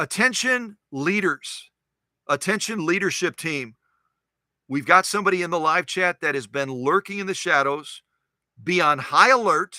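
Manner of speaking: normal talking voice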